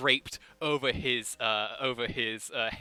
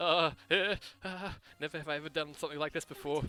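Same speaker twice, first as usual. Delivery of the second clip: nervous character voice, higher and quieter; 3 semitones higher, 4 dB quieter than usual. Playing Bluebell beside the judge in a courtroom scene, nervous Bluebell voice. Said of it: "Seems very nervous right now".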